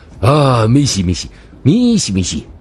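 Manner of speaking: fawning, obsequious tone. Bowing to an officer, a man answers him, fawning smile. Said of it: "陪笑着说".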